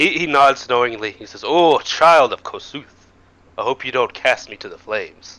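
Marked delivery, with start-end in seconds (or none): 1.4-5.4 jolly, cheery, jovial, good-humored voice. Game master voicing a character who addresses a player, jovial voice. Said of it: "He says with a jovial voice".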